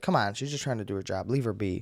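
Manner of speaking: plain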